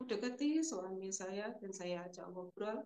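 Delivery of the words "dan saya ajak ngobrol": normal talking voice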